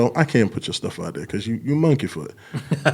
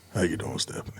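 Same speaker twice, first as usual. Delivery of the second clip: sexy, smooth, breathy, sultry near-whisper; 6 semitones lower, 13 dB quieter than usual. Greeting a listener after being urged to use it: sexy, sultry, smooth voice. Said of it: "you got a sexy, sultry, smooth voice".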